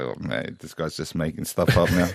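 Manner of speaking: low soft mutter.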